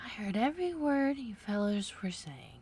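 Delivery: hoarse, feeble, weak voice. Reading a story aloud, a character speaks up: hoarse, feeble voice. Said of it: "in a hoarse, feeble voice".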